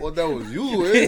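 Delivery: slick put-on Mexican accent. Joking about being confronted, slipping into a mock Mexican accent. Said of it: "gonna slick hit a Mexican accent".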